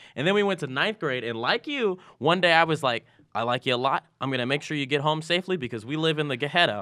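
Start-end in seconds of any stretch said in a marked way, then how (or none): none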